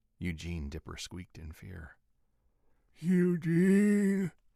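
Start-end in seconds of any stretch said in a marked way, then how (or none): 3.0-4.3 eerie, creepy, very high, very loud, drawn-out call. Trapped in a locker room, the narrator calls out to eugene, creepy voice. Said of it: "in what came out as a creepy-ass voice".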